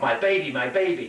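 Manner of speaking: ordinary talk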